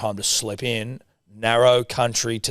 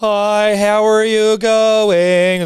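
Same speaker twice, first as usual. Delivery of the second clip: very slow, loud put-on American accent; 11 semitones higher, 8 dB louder than usual. Mocking the idea of an American Pope greeting people: put-on American accent. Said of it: "Like an American accent".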